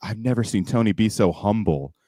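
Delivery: ordinary talk, nothing marked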